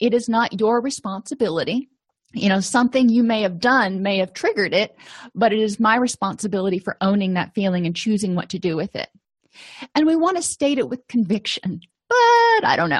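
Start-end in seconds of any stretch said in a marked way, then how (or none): 12.1-13.0 very high, mocking, sarcastic tone. Showing how not to state a feeling with conviction: sarcastic. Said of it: "I'm being sarcastic".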